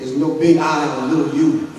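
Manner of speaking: plain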